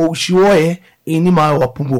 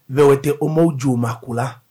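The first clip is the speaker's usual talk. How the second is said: normal talking voice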